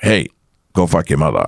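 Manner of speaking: ordinary talk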